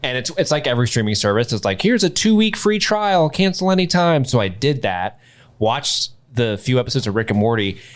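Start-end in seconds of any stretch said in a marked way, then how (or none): 1.8-4.2 very high-pitched cartoonish voice. Mimicking a streaming service's free-trial pitch, in the Morty voice. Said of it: "I like how you did that in the Morty voice".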